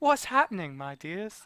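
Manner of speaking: put-on Scottish accent, female voice. Taking a request, the speaker tries a female Scottish voice. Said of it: "Female Scottish voice".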